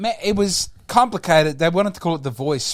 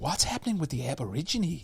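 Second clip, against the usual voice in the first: put-on American accent, hushed under the breath; 11 dB quieter than usual. Speaker mimicking how Americans will react, in put-on American accent. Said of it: "all these Americans will be like".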